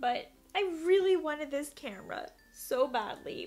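choked-up voice, close to tears. Talking about wanting a new camera, the speaker is about to cry. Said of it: "I don't know why I'm about to cry".

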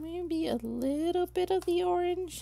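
doubtful, questioning, skeptical high-pitched voice. Speaker deciding what to add to the middle of their flower: skeptical, high-pitched. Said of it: "I say skeptically in a high pitch voice".

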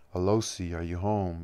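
usual speaking voice

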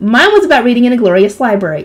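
plain

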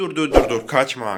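loud, playful calling-out delivery.

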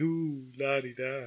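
put-on mockery. Retelling how the other speaker's mother made fun of wanting a garage: imitating a mocking tone. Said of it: "your mother started making fun of me".

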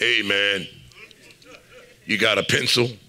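very deep, low, hushed, soft tough-guy voice. Retelling a guy in study hall asking for a pencil, imitating another guy's voice. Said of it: "The other guy had a voice like this".

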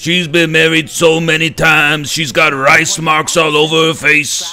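loud, slow, belted put-on growl. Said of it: "The only [name] impression I do is".

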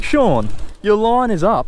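automated, robotic phone assistant announcement voice. While fishing, the speaker imagines an alert about his line, in a Siri voice. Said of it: "like a Siri voice saying".

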